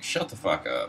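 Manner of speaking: normal talking voice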